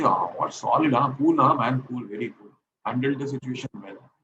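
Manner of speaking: ordinary delivery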